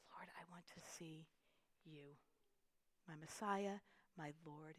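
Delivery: soft, hushed, barely voiced whisper. Retelling a man naming his want to his Lord: whisper. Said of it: "I imagine in a whisper as compared to a shout".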